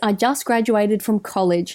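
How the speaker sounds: normal talking voice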